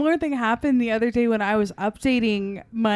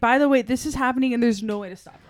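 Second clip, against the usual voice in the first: ordinary delivery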